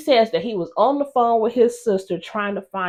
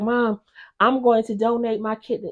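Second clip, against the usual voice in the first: put-on whispered voice. Retelling how he tells his mom he will donate: imitating someone whispering. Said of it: "he whispers to his mom".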